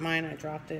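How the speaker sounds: plain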